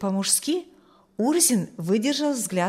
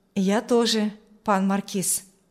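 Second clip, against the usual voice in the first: ordinary delivery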